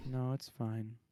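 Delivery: sounding sad. Declining another player's offer to come help, sounding sad. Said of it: "You sound so sad".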